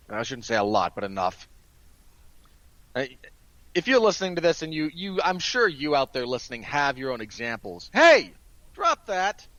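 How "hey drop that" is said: sudden, loud, high-pitched shout. Interrupting the podcast to yell at the dog, yelling. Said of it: "had to yell at my dog".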